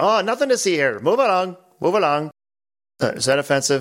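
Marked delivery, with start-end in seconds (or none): 0.0-2.3 put-on Irish beat-cop accent, pitched up. Joking about a forum thread being over: Irish cop accent. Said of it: "The Irish cop thing".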